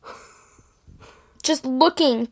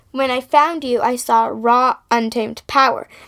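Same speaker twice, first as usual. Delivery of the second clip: plain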